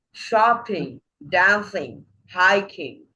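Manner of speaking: first syllables of shopping, dancing, hiking hit hard. Teacher repeating example gerunds, first-syllable stress on shopping, dancing, hiking. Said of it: "emphasize the first syllable and say".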